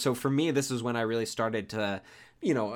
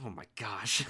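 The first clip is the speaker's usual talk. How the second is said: mock muttering under breath, quieter; 3 semitones lower, 7 dB quieter than usual. Imitating a character back in his cabin: imitating muttering under breath. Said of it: "cussing underneath his bre-, breath".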